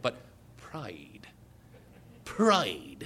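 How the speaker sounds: very low, deep, hushed, put-on British accent. Contrasting how Americans and the British say a word, saying it like a British man. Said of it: "Like a British man".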